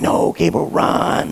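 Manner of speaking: little, quiet voice. Speaker acting out the small voice in his head, small voice. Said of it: "a small voice in my head going".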